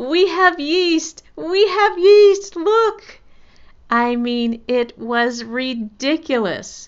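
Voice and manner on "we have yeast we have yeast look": play-acted giddy, very high, joyful squealing scream. Retelling finding yeast while cleaning the pantry: imitating joyful screaming. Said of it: "jumping up and down in the kitchen screaming".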